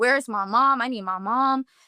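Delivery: mock crying. Retelling being scared while relatives thought she was playing, imitating her own crying. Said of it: "And I'm crying. And I'm like".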